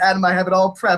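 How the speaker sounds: ordinary talk, nothing marked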